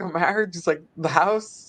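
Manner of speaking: ordinary talk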